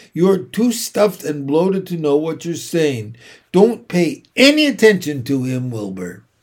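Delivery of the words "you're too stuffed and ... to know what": ordinary delivery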